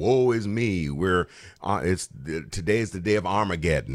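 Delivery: ordinary delivery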